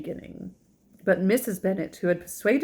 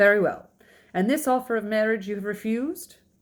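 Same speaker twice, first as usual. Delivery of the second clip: plain reading voice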